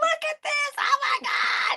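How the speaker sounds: mock breathy, drawn-out, slowly savored excited whisper. Retelling their own reaction to seeing a gift: imitating own excitement. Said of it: "I was so excited".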